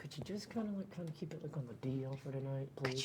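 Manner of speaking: hushed, very soft, barely audible half-whisper. Asking a friend in character to keep it quiet: half-whispering. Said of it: "I whisper".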